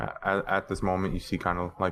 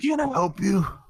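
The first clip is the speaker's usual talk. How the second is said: very high, put-on elderly old-man voice; 12 semitones higher, 4 dB louder than usual. Narrating a scene where an old man comes out of a door, in an old man voice. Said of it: "an old man comes out".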